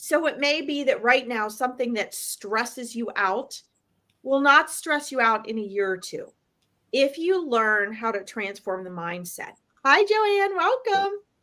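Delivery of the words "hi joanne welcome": voice jumps way up, high and bright on hi. Welcoming a new guest to the session, voice going way up on hi. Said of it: "my voice goes way up when I say hi".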